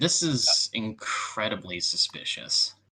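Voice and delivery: deep, slow voice.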